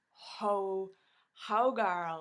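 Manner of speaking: very loud, excited, gushing outburst.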